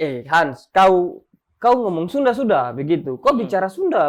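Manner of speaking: ordinary delivery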